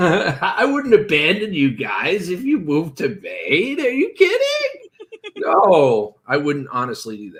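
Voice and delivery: swooping, sarcastic speech through laughter. Setting the sarcasm aside while talking to the group, laughing while talking. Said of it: "as I laugh while I say this".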